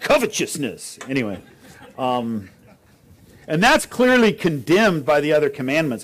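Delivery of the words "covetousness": "covetousness" said in Southern US preacher accent. Speaker explaining a word shows how it should sound: Southern Baptist accent. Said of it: "you should say covetousness with a Southern Baptist accent".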